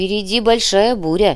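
ordinary delivery, nothing marked

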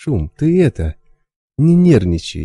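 frightened, placating tone. Reading a story, a young stalker speaks to a man drawing a knife, frightened. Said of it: "молодой сталкер испуганно покосился на нож".

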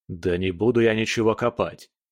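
ordinary delivery

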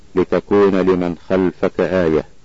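plain

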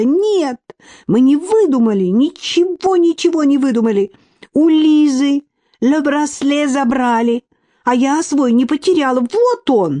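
offended, hurt, slow high-pitched cry. Tanya answers Marina's claim that the girls made up the story: offended shouting. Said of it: "Таня обиженно закричала".

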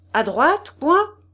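dry and terse. Reading Séliphane speaking to the little girl beside him: curt. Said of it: "dit sèchement Séliphane".

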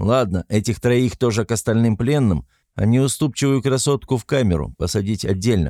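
ordinary delivery

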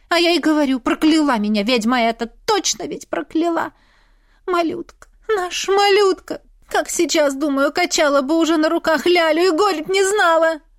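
loud, high, grief-stricken shouting. A woman talking with the blacksmith is shouting. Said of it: "Не кричи".

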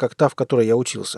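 ordinary delivery

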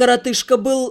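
ordinary delivery

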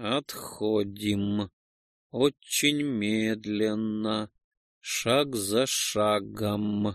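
slow, each syllable spaced apart. Facing a hungry, aggressive insect creature, speaking to the group, almost syllable by syllable. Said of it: "почти по слогам произнес я".

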